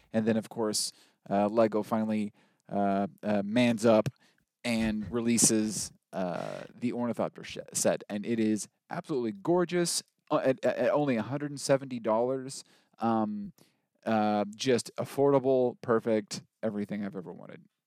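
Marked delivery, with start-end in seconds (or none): none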